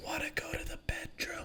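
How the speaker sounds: very quiet, breathy, barely voiced leaning-in whisper. Retelling a massage where she leaned in: imitating a whisper. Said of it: "just leans in and whispers".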